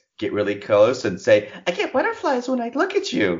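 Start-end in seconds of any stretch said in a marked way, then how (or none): 1.7-3.4 very high, flirty, come-hither sweet voice. Demonstrating what to say up close to a man, in a high-pitched voice. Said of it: "you just use that high-pitched voice".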